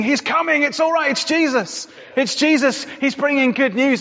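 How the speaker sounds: watchman-style shouting. Invoking an image of a watchman announcing Jesus, the speaker performs a watchman shouting the news. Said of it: "image of watchman shouting".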